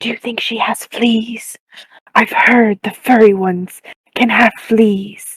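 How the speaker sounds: stage whisper delivered as an aside. Whispering in character to another player about a stranger: whispering. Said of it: "I'm gonna whisper to Charles".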